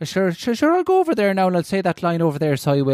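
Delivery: exaggerated fake Irish accent, thick and sing-song. Mocking how outsiders try to copy the accent: exaggerated fake Irish accent. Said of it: "They try to do it, and they always sound like".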